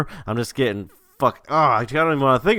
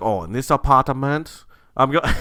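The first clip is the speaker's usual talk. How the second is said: put-on Russian accent, faltering, only half held. The speaker acts out a man's line, in a faltering Russian accent. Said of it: "I cannot maintain a fucking Russian".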